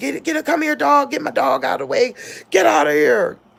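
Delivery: put-on, very high-pitched, raw, rough shrieking. Recounting a bear encounter, screaming at baby girl and the dog: retelling a scream. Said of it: "I'm screaming at baby girl".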